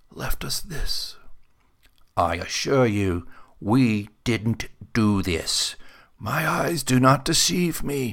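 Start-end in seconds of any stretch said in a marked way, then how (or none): 6.1-8.1 leathery whisper, much higher. Reading a story, voicing an old man answering a sergeant: leathery whisper. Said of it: "His voice a leathery whisper".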